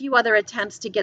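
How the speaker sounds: usual speaking voice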